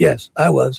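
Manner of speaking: rough, gravelly put-on voice. Reading deposition answers aloud as Nanos: gruff voice as Nanos. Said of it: "answer in a gruff voice, that's me as Nanos".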